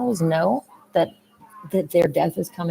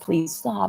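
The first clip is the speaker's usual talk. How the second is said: put-on weepy, tearful, crying voice. Acting out a vegan begging others to stop: mock crying plea. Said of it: "a vegan is sitting there crying and saying".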